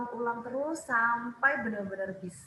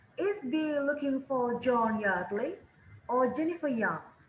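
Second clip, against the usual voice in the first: put-on pitch rises on Yardley, falls on Young. Teaching intonation of alternative questions: rise on Yardley, fall on Young. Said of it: "Pilihan pertama nadanya naik. Kalau pilihan kedua sebelum tanda tanya nadanya turun".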